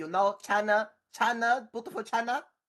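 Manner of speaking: comic Chinese accent. Unable to do Pee Wee Herman, the speaker offers another voice: Chinese accent. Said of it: "I could do Chinese accent".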